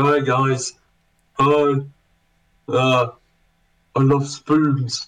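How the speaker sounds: put-on very slow, drunken babbling ramble. Retelling how Sam acts when he sends drunk texts: imitating drunk Sam. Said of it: "He gets drunk, lays in his bed ... goes".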